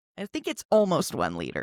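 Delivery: ordinary delivery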